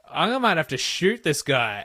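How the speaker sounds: put-on anger. Acting out a panicked morning-after thought: mock rage. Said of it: "the rage that comes the next morning where you're like".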